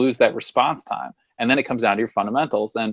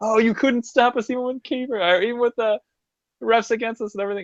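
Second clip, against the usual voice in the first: very high, furiously happy, acted-out ecstatic screaming; 12 semitones higher than usual. Recalling going from furiously angry to furiously happy, retelling own scream. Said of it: "because I was screaming like".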